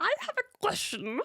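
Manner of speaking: squeaky, very high-pitched voice. Showing off a new voice while asking a question, in Yoda voice. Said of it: "You sounded like Yoda then".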